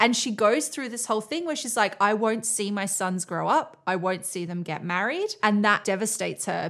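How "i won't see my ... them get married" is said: usual speaking voice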